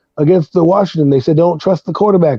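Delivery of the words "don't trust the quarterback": usual speaking voice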